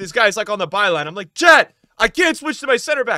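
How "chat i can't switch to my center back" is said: loud, high screaming. Retelling a moment when a counterattack came: retelling screaming at chat. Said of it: "I'm screaming it".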